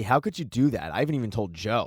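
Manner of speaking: ordinary talk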